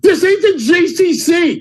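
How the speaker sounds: high, slow, mock coach scream. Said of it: "he's screaming at me".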